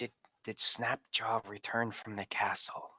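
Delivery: hushed whisper. A player leans in to ask another character a question, whispered. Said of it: "I'll lean in and whisper that".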